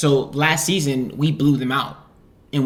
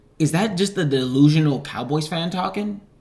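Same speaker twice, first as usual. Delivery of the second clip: normal talking voice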